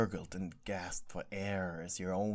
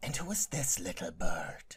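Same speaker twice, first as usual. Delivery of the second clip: sibilant, eerie, swooping, ghostly hissing voice. Narrator reading a ghostly man approaching the listener, hissing. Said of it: "the ghost hissed".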